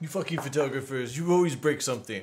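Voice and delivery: loud, bad French accent laid on thick. Quoting a French man who thought he kept breaking things, in a bad French accent. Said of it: "That's what my French voice sounds like".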